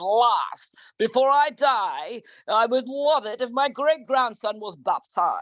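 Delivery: put-on English accent. Doing the voice of an aging father from england, in an english accent. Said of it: "My father's from England ... and I always do his voice".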